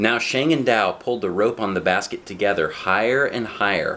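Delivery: ordinary delivery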